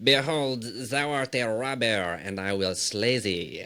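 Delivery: put-on French accent. Retelling what he said in a scripture verse, the speaker uses a french accent. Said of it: "he did say in his fre- French accent".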